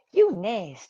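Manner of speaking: prim, proper Alabama lady voice. Imitating Lacey Evans saying her line: prim and proper Alabama lady voice. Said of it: "like an old school, like, uh, Alabama prim and proper".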